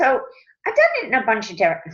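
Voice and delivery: voice breaking mid-phrase. Answering a question someone sent in, voice cracking. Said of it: "my voice is cracking".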